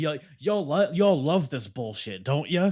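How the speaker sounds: high, loud, jeering, taunting yell. Retelling how the winner taunted the audience, retelling a yell at the audience. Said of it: "he's like yelling at the audience".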